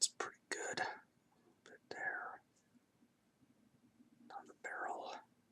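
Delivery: hushed whisper. Painting a model and narrating each step: whispering. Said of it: "I keep whispering during these".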